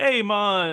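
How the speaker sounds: bad fake Jamaican accent, pitched high. Describing a Vice Squad character who rolls up in a really bad Jamaican accent. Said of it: "he does this really bad Jamaican accent".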